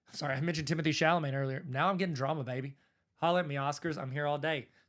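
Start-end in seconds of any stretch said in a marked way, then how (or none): none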